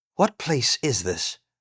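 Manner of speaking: hushed, quiet voice. Taran, silent a while, finally speaks to Medwin in a hushed voice. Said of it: "in a hushed voice".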